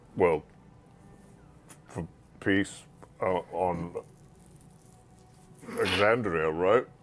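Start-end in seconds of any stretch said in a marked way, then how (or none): 1.9-6.9 hesitant and halting, quieter and lower. Discussing what to wish for, speaker suggests a wish haltingly.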